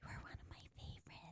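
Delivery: eerie voiceless whisper.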